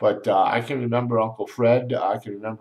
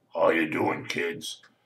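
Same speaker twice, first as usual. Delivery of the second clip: deep, low-voiced delivery; 5 semitones lower, 4 dB quieter than usual. Speaker imitates Uncle Greg greeting the kids, imitating Uncle Greg's deep voice. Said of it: "Greg talked like this. He was a deep voice".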